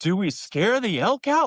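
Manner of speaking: mock, super loud, high, rising, blurted-out speech. Retelling a hunt, imitating the brother there to hunt asking a super loud question. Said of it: "Like super loud".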